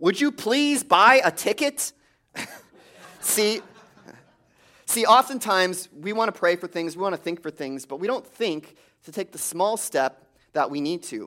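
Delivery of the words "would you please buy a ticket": play-acted high, booming, thundering voice from above. Telling a joke, heaven answers a man who prayed to win the lottery, booming voice from heaven. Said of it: "a voice booms from heaven".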